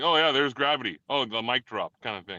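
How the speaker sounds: ordinary delivery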